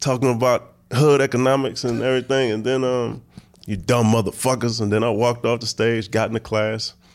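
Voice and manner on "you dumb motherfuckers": put-on tough monologue voice, higher. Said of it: "I just did my best Ving Rhames impersonation".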